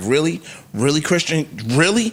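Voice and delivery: ordinary talk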